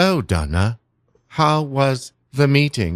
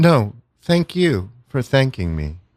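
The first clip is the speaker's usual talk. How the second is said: scary, robotic computer AI voice. Answering Donna as the HR AI: scary computer voice. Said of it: "you sound a lot like a, a computer".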